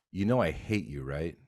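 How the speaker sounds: usual speaking voice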